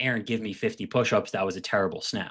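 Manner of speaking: normal talking voice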